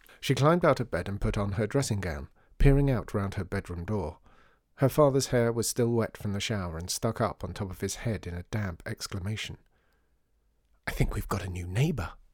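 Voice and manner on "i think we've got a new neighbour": in a whisper. A father speaking to his daughter at her bedroom door, whispered. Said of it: "he whispered".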